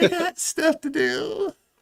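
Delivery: put-on voice crackle. Repeating a played clip's line, imitating a voice crackle. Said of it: "the little voice crackle".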